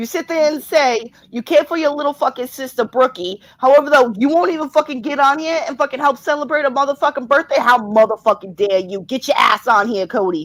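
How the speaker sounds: full, scolding mom voice. Scolding someone who won't come on to celebrate a birthday, in a mom voice. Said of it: "Sean's being the mom voice".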